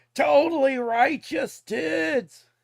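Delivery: loud surfer dude voice. Riffing on old slang words with a co-speaker, Michelangelo surfer-dude voice. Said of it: "I sound like fucking Michelangelo".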